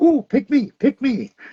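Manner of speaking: very high-pitched, squeaky cartoon voice. Recalling the Shrek DVD menu: Donkey from Shrek voice. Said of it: "Eddie Murphy is the donkey".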